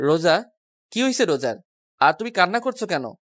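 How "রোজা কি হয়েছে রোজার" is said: usual speaking voice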